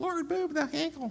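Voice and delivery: very high, tiny little bird voice. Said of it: "this little, you know, Tweety bird".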